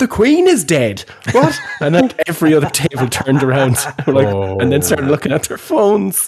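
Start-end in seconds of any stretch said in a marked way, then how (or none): 0.0-1.6 play-acted, very high, shrill shouting. Retelling how someone half heard a remark and shouted, retelling a shout. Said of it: "half heard me and shouted".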